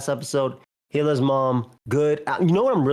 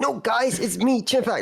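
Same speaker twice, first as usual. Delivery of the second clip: put-on mocking voice, high and slow; 8 semitones higher than usual. Chatting with friends, showing how Chipback makes fun of a voice, imitating Chipback's mocking voice. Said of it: "That's how Chipback makes fun of his voice".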